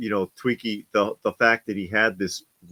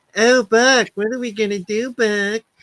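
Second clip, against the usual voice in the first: very high, loud, squeaky little voice; 14 semitones higher, 7 dB louder than usual. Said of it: "that high pitched squeaky voice".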